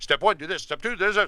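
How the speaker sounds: breakneck, fast, rattled-off delivery. Mimicking someone's default install-tutorial speed, rattled off like Kyle. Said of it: "That's way too fast. That's Kyle's normal speed".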